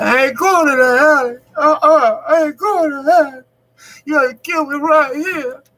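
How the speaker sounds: loud, very high, desperate crying voice. Retelling refusing a robber's order to walk into the alley, imitating own past crying. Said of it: "I started crying".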